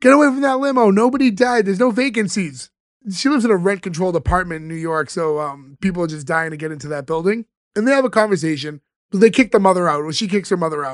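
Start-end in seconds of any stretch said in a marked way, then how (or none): 0.0-2.7 high-pitched scream. Retelling how Fran screams out the window at a crowd: imitating Fran screaming. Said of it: "she just screams out the window".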